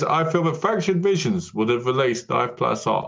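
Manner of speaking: usual speaking voice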